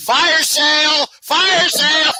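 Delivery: high-pitched shrieks, screamed over and over. Telling a funny story, the speaker reenacts screaming, retelling own screaming. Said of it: "when I start screaming".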